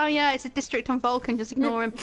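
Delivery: normal talking voice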